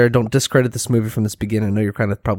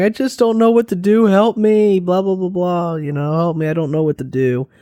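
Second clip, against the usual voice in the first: mock crying, pleading, much higher pitch; 8 semitones higher than usual. Retelling a favorite movie scene, acting out the older sister, imitating the older sister crying. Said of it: "she's crying".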